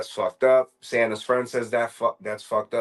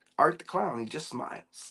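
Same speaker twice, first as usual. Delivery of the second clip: normal talking voice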